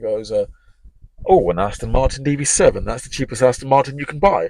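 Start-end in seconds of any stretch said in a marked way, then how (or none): 1.2-4.5 loud, proud, chest-out delivery. Retelling a big guy's remark about a car: imitating saying it with chest. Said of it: "he said it with chest".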